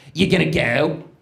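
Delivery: put-on genuine Philadelphia accent. Retelling an overheard woman asking her friend about a party: real Philly accent. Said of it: "Like a real Philly accent".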